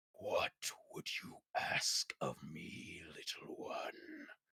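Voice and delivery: very slow, very soft whisper, dark otherworldly presence. Voicing a dark, powerful presence that speaks to a player: echoing voice of a dark presence. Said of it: "this voice that reaches out and says".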